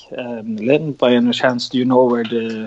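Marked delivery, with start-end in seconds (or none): none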